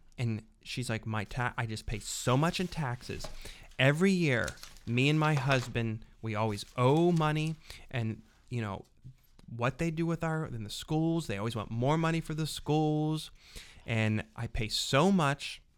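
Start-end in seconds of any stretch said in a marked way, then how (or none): none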